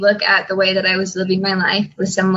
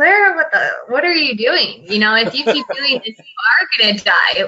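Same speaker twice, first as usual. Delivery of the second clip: put-on yelling, higher; 4 semitones higher than usual. Retelling what another speaker yelled at her in his office: imitating someone yelling. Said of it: "you kind of just yelled at me".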